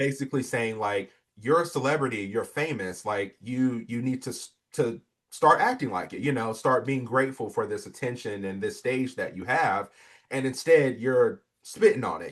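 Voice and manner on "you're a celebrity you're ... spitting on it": usual speaking voice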